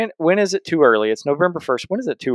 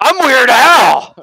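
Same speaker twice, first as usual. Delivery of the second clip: shrieked scream at full volume, very high; 11 semitones higher, 9 dB louder than usual. Retelling a confrontation with kids: retelling a loud scream. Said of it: "And I screamed it, like, really loud".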